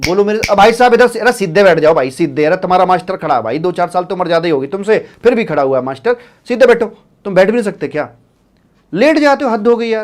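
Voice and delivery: loud, fast mock scolding tone.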